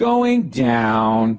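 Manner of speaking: mock dreary, depressing elevator voice, "down" drawn out. Complaining about the elevator's announcement, imitating depressing elevator voice. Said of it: "your whole life is going in the shitter".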